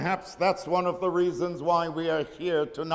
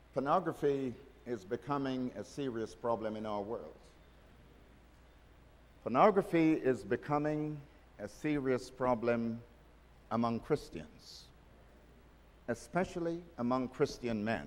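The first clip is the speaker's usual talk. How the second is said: very slow, low, grave, solemn and deliberate; 5 semitones lower, 7 dB quieter than usual. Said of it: "I want to say this very slowly and very seriously".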